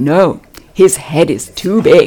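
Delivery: very loud, big, booming voice. Retelling what the speaker's wife said to someone, in a big, loud voice. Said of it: "my wife said in this big, loud voice".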